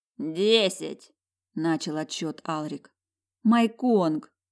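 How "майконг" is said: high-pitched, raised, imploring, begging cry. The narrator begs the beast to change back while Alrik counts down: pleading. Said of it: "умоляюще смотрела я".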